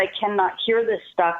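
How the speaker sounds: normal talking voice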